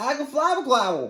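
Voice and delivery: put-on high, loud toddler-like baby babble.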